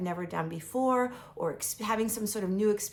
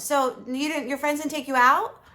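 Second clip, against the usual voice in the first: high, raised, pressing put-on mother voice; 8 semitones higher, 9 dB louder than usual. Retelling how a mother kept repeating the same question, in a mother voice. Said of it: "I'm going to do the mother voice".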